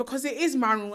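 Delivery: ordinary talk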